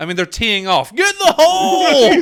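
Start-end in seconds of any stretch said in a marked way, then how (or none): 0.9-2.1 very high, shrill, drawn-out golf-fan heckler yell. Mocking spectators as golfers tee off, imitating a golf fan shouting. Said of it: "what are you supposed to shout at golf?".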